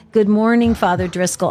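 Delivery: ordinary delivery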